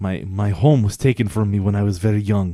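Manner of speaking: put-on Russian accent. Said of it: "what's with this accent?".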